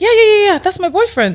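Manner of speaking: enthusiastic, excited tone.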